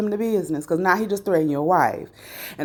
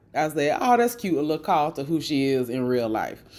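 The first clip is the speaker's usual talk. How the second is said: ordinary talk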